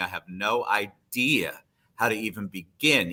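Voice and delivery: normal talking voice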